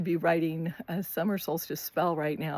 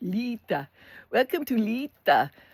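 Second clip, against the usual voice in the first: slow, laid-on, fake European accent; 4 semitones higher than usual. Speaker mimics a California-born person trying to sound European, put-on European accent. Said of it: "trying to have a European accent".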